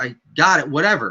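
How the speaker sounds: ordinary talk, nothing marked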